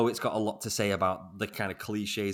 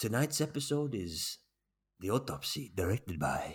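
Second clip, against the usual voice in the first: put-on unhurried, drawled Mexican accent; 3 dB quieter than usual. Describing how each episode is introduced: Guillermo del Toro impression with Mexican accent. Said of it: "in his beautiful Mexican a-, a-, accent".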